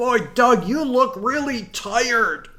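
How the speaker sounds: overly large, loud, very high, oversized stage voice. Retelling a line said so the audience could hear: overly large voice. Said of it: "I did in an overly large voice".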